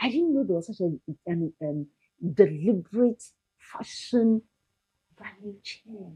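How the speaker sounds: hushed voice. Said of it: "I'm whispering to you".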